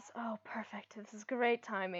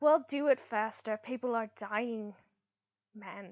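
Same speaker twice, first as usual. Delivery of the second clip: snarling, impatient, snarled delivery. The Starosta answers the elf man who promises he is working on it, snarling. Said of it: "the Starosta just snarls".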